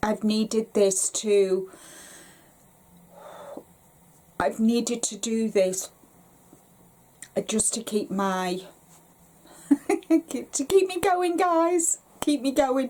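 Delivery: choked-up, tearful voice breaking into crying. Talking to viewers about a tutorial made in honour of their dad, crying. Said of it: "I swore I wasn't going to cry".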